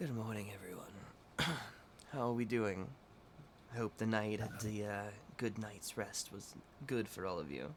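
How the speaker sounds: drowsy, groggy, just-woke-up voice. Voicing a café owner greeting the players early in the morning: groggy voice. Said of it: "very, like, groggily is like".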